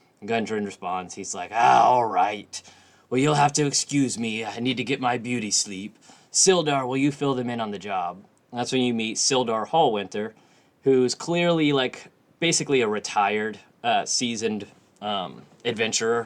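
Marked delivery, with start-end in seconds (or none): 1.5-8.2 put-on rambling drunk voice. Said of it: "as he's rambling on drunk".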